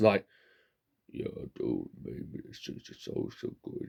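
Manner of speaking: low put-on voice. Demonstrating the voice they often do, in a deep voice. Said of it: "I do this deep voice".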